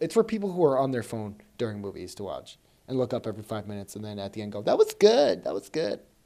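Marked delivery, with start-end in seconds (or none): 4.6-6.0 put-on very high, loud, creaky teenage-girl voice. Mocking people on phones during movies, doing an impression of 15-year-old girls. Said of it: "That's my impression of 15-year-old girls".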